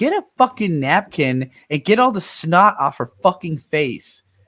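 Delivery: loud, raging, angry screamed outburst. Reading a video game's story aloud, the speaker screams at the bad parent character. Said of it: "I'm I'm screaming at the bad parent".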